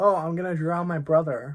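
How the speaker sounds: acted casual delivery. Retelling what a girl said at share time: imitating a casual remark. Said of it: "she said it so casually".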